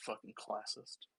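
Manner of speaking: hushed, very quiet whisper. A character walks over to another character and whispers. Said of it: "He walks over to Auric and then whispers".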